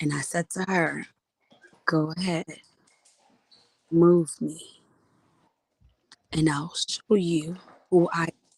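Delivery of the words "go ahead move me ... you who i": imitated very calm voice, lower. Retelling a warning to a daughter: retelling a very calm voice. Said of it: "with the calmest voice that she have never heard".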